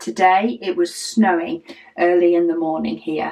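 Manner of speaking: ordinary talk, nothing marked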